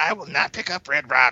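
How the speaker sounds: stubborn, digging-in protesting tone. Imitating a friend protesting about picking up a comic: imitating Aaron protesting. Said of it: "That's how Aaron sounds".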